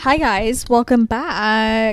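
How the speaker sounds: voice breaking and cracking, drawn out. Speaker opens a video greeting viewers, with a voice crack. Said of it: "I had a voice crack there".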